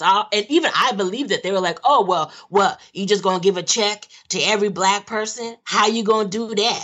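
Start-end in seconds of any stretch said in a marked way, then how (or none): 1.8-6.9 incredulous, scoffing, dismissive disbelief. Retelling how people dismissed reparations: imitating people scoffing at reparations. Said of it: "You said it in the right voice".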